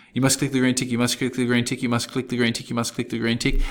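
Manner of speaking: very fast, rapid-fire, rattling repetition. Speaker repeats a phrase over and over like a tongue twister: very fast. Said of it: "Say that thirty times and say it real fast".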